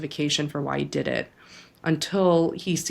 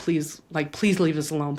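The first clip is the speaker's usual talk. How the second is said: put-on begging, pleading voice. Retelling an argument, begging her to leave them alone: retelling own begging. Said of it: "I was begging her".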